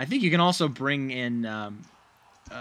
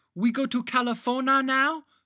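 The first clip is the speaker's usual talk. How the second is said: horrible put-on child voice, very high; 13 semitones higher than usual. Recounting a line an adult woman delivered while trying to do a kid's voice. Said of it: "an adult woman trying to do a kid's voice".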